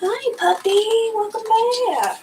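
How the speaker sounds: sweet, slow, high-pitched talk.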